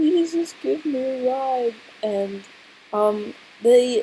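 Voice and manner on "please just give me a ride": put-on high, whiny, pleading baby-like voice. Retelling asking for a ride at urgent care: retelling a whiny plea. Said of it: "I'm feeling like a whiny baby".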